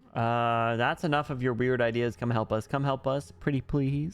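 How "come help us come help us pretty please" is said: pleading, coaxing, guilt-tripping tone. Urging someone reluctant to drop their plans and come help: pleading, guilt-tripping tone. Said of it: "Don't use that tone".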